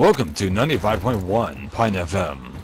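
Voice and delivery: radio announcer voice. Told to finish it, speaker does the station intro in a radio voice. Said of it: "you got that radio voice".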